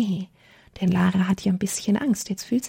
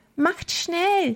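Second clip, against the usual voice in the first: high, quavering, trembling, urgent cry; 9 semitones higher than usual. As the sun sets, Lara urges her friends to hurry, trembling voice. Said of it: "ruft Lara mit bebender Stimme".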